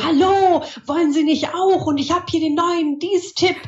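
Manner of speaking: toned-down salesman shouting. Imitating people on camera who always shout at viewers: imitating people who shout, toned down. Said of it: "die immer schreien, ich möchte jetzt nicht so laut vormachen".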